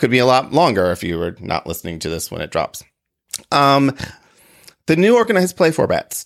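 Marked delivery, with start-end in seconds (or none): 3.5-6.3 very slow, high, choked-up voice catching. Speaking to listeners of the recording, choked up. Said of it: "I just choked up there for a second".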